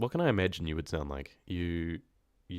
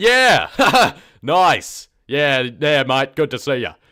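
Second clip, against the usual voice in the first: very loud, very slow, booming, drawn-out; 8 semitones higher, 17 dB louder than usual. Speaker demonstrates how some people greet each other: loud voice. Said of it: "just how loud someone talks".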